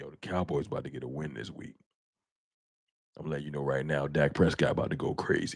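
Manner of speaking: very deep, soft, hushed murmur. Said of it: "come in here with the Boys to Men voice".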